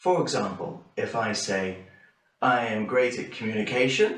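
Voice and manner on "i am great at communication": rising pitch at the end on "communication". Demonstrating intonation with an interview example, rising pitch at the end. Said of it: "with a rising pitch at the end".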